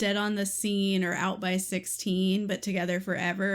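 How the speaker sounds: ordinary delivery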